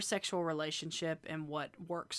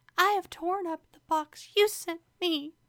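very high mock whisper voice. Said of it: "you mean whisper voice?".

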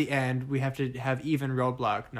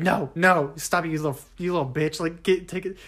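mock angry, trash-talking rant, yelled; 4 semitones higher, 4 dB louder than usual. Retelling playing Mortal Kombat with a college roommate: imitating own angry gaming rant.

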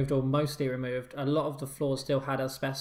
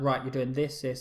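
put-on calm tone. Describing how a boss gives an instruction, imitating a calm order. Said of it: "tells you very calmly".

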